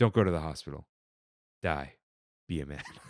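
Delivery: low, expressionless deadpan delivery, acted out. Speaker describes a social media video of a guy, imitating a deadpan delivery. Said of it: "he'll just deadpan the camera and be like".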